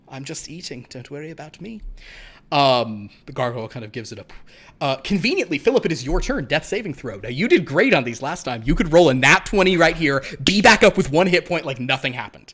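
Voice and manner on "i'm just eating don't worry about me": very calm, soft, utterly unbothered vampire voice. Voicing the vampire while a gargoyle looks at it, very calm vampire voice. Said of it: "The vampire kind of just goes very calmly".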